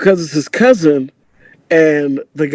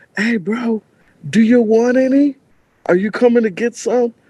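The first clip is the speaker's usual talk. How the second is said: mock high, loud yell; 7 semitones higher than usual. Recounting calling out to the guy they were with, retelling a yell from the table. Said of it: "I'm yelling from the table".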